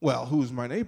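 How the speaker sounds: mock-evasive, squirming. Retelling the lawyer's question to Jesus: mock-evasive, squirming. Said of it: "I imagine he said it like that. I imagine he was trying to kind of wiggle around".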